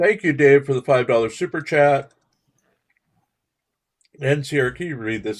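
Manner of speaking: speaking while chewing with a full mouth. Thanking a viewer for a super chat and asking sierra to read: mouth full of food. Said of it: "I have a mouthful of food".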